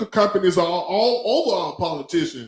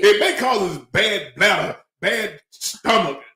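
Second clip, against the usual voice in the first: ordinary delivery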